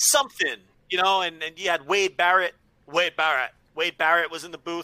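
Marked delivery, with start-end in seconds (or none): 2.9-3.5 bad put-on British voice. Imitating a wrestling commentator saying his own name: bad Wade Barrett impression. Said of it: "me imitating Wade Barrett saying his own name".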